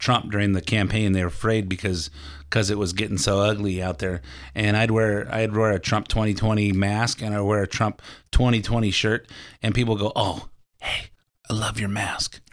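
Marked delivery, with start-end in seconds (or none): 10.1-12.3 slow, hushed whisper under the breath. Retelling how people quietly praised a campaign mask: imitating someone whispering. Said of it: "Why are you whispering it?".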